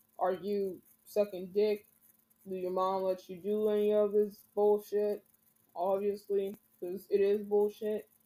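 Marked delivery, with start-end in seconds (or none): none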